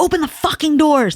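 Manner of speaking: high-pitched yelling. Retelling a man yelling at the speaker while moving boxes: imitating someone yelling. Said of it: "he's yelling at me".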